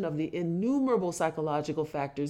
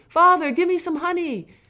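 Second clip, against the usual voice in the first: very high, loud, glad, joyful exclamation; 11 semitones higher, 10 dB louder than usual. Reading a memoir aloud, a young son's line on seeing a dish of honey, crying out joyfully. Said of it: "he cried joyfully".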